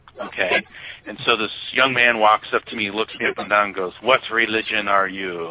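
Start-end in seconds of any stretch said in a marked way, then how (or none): 4.0-5.5 put-on thick Russian accent throughout. Retelling what a young man asked the speaker, heavy Russian accent. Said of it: "he had like this heavy Russian accent".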